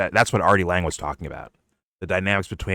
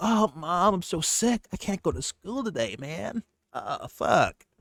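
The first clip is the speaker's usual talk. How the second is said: very high, drawn-out, fake sick voice; 11 semitones higher, 6 dB quieter than usual. Retelling pretending to a parent to skip school: imitating a fake sick voice. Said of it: "you put on, like".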